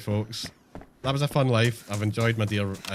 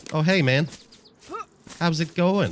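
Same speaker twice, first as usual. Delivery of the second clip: fake American accent, pitched up; 8 semitones higher, 3 dB louder than usual. Deciding to hide the accent, greeting someone in a put-on american accent. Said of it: "I'll just do an American accent".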